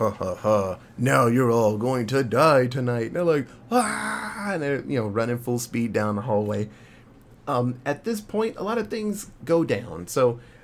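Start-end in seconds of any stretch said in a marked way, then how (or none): 0.0-3.1 put-on demon laugh, louder. Recounting a horror story, acting out Angela's demon line, Angela's evil demon laugh. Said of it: "and she's laughing".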